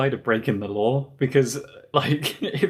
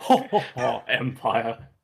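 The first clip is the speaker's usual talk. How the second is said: mock, put-on British-sounding laugh; 2 semitones lower than usual. Showing the others what a british laugh sounds like: mock british laugh. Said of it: "is there a British laugh?".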